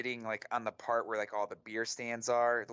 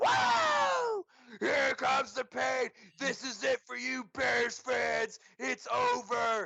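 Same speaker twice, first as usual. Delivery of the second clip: mock drunk voice, very high, very slow, drawn out; 4 dB louder than usual. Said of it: "how fucking hammered he was".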